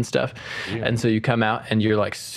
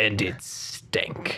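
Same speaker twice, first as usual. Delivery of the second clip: put-on disdainful British accent, quieter; 5 dB quieter than usual. Quoting how a book's reader delivered a line, mock-disdainful, British accent. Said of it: "he said it with such disdain".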